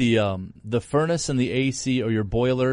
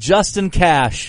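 loud, high yelling; 5 semitones higher, 7 dB louder than usual. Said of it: "What are you yelling at me for?".

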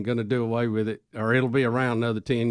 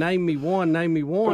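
plain

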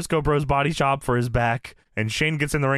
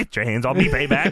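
put-on old-time 1970s mobster voice. Retelling what a show character said when grabbed, in a 1970s mobster voice. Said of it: "Like a 1970s mobster".

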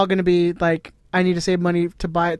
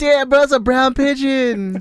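put-on stoner voice, much higher; 7 semitones higher than usual. A speaker admits to doing a terrible impression: worst Spicoli stoner impression. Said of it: "I'm doing the worst, like, stoner fucking impression".

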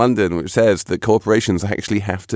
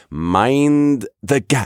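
mind with long stretched vowel, followed by gap; 3 semitones higher than usual. Showing the cadence of a British phrase, long drawn-out mind, quick gap. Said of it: "There's that long mind and then the gap comes quick".

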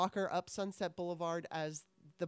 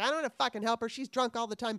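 mock high, shrill screaming, ranting outburst; 5 semitones higher, 4 dB louder than usual. Telling a story, the speaker acts out the neighbor who yelled at them; imitating a screaming neighbor. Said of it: "her neighbor's screaming at me like".

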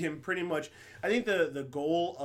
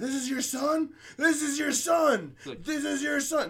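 put-on shrill scream, very high and loud; 11 semitones higher, 6 dB louder than usual. Recapping a scene where Shane beats a man and screams at his dad, imitating Shane screaming. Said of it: "he's screaming to dad".

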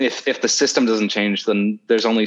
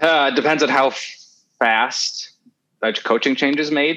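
higher-pitched, exasperated voice. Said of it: "You sound exasperated".

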